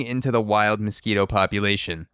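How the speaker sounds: ordinary delivery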